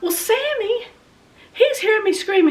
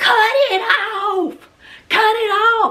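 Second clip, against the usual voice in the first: put-on hollering scream, slow, each word stretched; 3 semitones higher than usual. Retelling signaling to her husband on the mower: imitating her own screaming. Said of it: "I was going".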